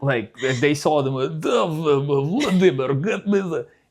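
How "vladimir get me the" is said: fake, very slow movie Russian accent, name drawn out. Showing how Americans think Russians talk in movies: stereotypical movie Russian accent. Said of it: "Russians don't talk like".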